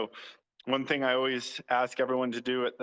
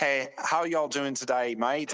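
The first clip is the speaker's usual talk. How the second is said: fake, put-on British accent. Showing how he'd talk to other players in online games, in a put-on British accent. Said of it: "I'd start with like a sh- some British accent".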